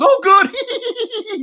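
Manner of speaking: very high, loud, all-excited burst. Retelling her reply to the speaker's suggestion, imitating her excitement. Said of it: "She was all excited".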